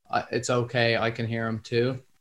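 usual speaking voice

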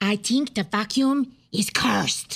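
put-on Spanish-accented English. In an acted scene, answering the other character's question, in a Spanish accent. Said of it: "can you do a Spanish accent?".

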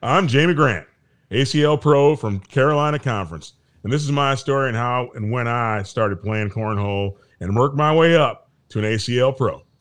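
put-on Southern drawl, a best attempt. Reading a cornhole pro's story aloud, doing their best Southern drawl. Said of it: "i'm going to do my best southern draw".

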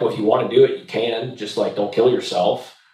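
plain

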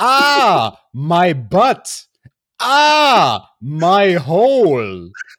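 very loud, drawn-out pained howl, stretched ahs. Imitate Nia Jax after her leg drop misses and she hits the apron: Nia Jax impression. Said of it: "dann macht sie erstmal eine Grimasse und sagt".

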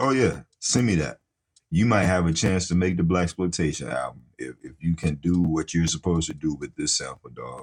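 ordinary delivery

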